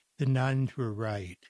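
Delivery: brief pause, then spoken gently. Retelling own answer to an audience question about blindness: soft voice. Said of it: "in a soft voice".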